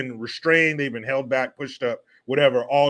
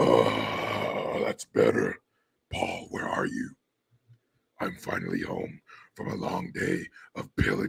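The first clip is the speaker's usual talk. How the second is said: put-on drunken ancient demon voice, breathy, slurred whisper; 7 dB quieter than usual. Impression of Nancy Pelosi arriving home, Nancy Pelosi as drunk demon. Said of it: "my impression of Nancy Pelosi ... Drunk ancient demon".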